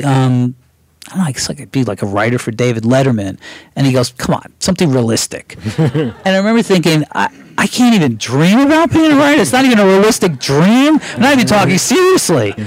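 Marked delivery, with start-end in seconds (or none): none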